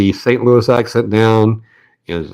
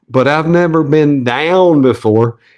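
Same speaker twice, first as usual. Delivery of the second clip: thickest, slow, broad southern drawl; 5 semitones higher than usual. Retelling answering his mom from the top of an escalator, in his most southern voice. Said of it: "I said in my most southern voice".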